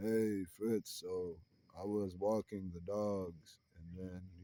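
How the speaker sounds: low, slow, barely audible monster monotone drone. Showing how crazy it would be to talk this way on the phone, use a monotone Frankenstein voice. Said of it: "in kind of like a monotone Frankenstein type of tone".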